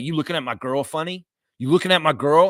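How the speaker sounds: aggressive, confrontational, provoking tone. Retelling a bar confrontation: imitating a bar guy picking a fight. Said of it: "somebody was like".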